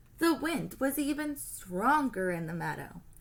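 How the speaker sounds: ordinary delivery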